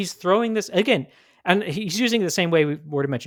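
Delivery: agitated, upset tone.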